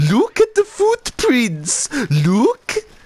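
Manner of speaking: put-on very high, sing-song, swooping Birmingham accent. Recalling a kid met in Spain who kept saying this; Birmingham accent. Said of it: "some kid with a Birmingham accent who had it. And he kept saying".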